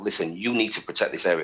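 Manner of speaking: normal talking voice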